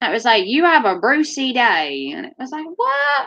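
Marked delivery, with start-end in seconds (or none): 0.5-2.1 put-on slow Australian accent. Imitating a self-service machine in Poundland, in an Australian accent. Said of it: "This machine's Australian".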